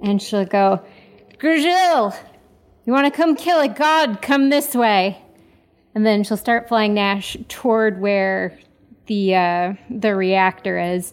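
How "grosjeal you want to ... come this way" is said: thundering, magically amplified, booming, pitched-up voice. Voicing her as she calls Grosjeal to follow, booming loud voice. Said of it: "make her voice boom three times louder".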